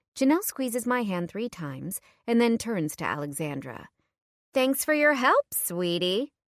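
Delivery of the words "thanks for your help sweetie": overly chirpy, unnaturally upbeat, fake cheerful brightness. [name] turns to Alexandra to thank her, in a fake upbeat tone. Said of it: "Her tone is so upbeat and unnatural".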